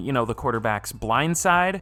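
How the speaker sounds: usual speaking voice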